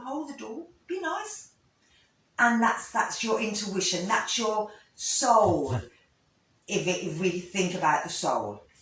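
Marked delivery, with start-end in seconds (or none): 0.0-1.5 soft, gentle, high little voice. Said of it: "another little voice goes".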